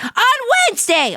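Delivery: shrill, very high, screechy voice. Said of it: "I sound like a screeching crow".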